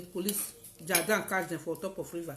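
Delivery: ordinary talk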